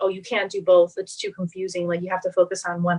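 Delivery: ordinary delivery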